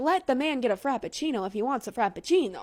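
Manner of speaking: put-on Italian accent throughout. Podcast host talking on an episode, Italian accent. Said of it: "Why did I say that in an Italian accent?".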